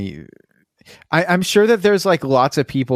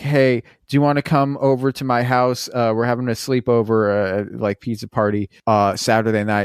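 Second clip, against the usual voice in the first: ordinary delivery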